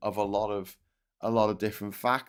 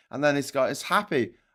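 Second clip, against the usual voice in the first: ordinary talk, nothing marked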